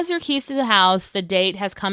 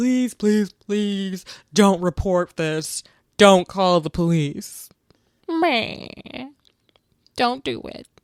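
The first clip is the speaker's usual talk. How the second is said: sobbing through tears, crying. Retelling a crime story, acting out a man begging not to be reported: imitating crying pleading. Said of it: "he starts crying after he does what he does and is like".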